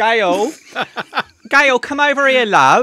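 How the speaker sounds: very high, very loud, shrill put-on Cockney accent. Repeating a Danish snack's name while tasting it with others, in a mock cockney accent. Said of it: "like a cockney".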